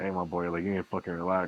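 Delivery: voice dropped down low into deep bass. Bouncer telling how he warns aggressive guys, retelling dropping his voice deep. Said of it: "I drop the fucking bass in my voice".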